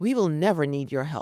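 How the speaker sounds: really aggressive, hostile, combative tone. Retelling an older girl's reply to the speaker's offer of help, in a mock-aggressive tone. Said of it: "This real aggressive tone".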